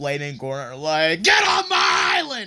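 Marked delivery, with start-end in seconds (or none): 1.2-2.5 high, loud angry shout.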